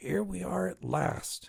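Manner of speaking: slow, harsh, grating, vulture-like hag rasp. Narrator reading a hag's arrival line, in a grating vulture-like voice. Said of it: "grated the hag in a vulture's voice".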